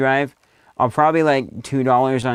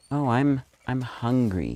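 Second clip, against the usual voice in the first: slow, unhurried, stretched-out, drawn-out character voice; 6 dB quieter than usual. Trying to copy Tyler's line from a video: imitating Tyler saying hungry. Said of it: "I'll try it".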